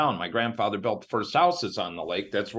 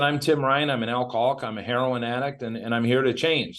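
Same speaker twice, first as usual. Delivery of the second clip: plain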